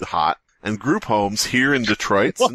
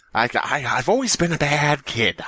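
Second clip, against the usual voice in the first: slow, drawn-out, stammering film villain voice; 3 semitones higher than usual. Answering a request to voice Joker from the Joker movie: imitating Joker. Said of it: "I don't know how to do an impression of him from that movie".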